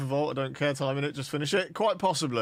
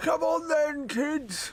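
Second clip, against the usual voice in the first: put-on very high old man voice; 13 semitones higher than usual. Trying out a game, the speaker plays as an old man: old man voice. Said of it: "I could play this as an old man".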